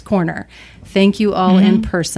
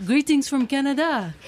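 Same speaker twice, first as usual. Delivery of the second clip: put-on French Canadian accent, quieter; 7 semitones higher, 6 dB quieter than usual. Imitating a Canadian's greeting, in a French Canadian accent. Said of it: "French Canadian".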